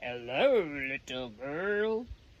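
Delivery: low, deep, growling voice. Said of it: "said a growly, deep voice".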